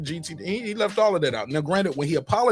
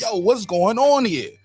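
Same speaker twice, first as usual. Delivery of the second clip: put-on pitched-up Baltimore accent; 5 semitones higher, 5 dB louder than usual. Retelling what Calvin Ford said about the promotion: imitating Calvin Ford, Baltimore accent. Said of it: "with the Baltimore accent".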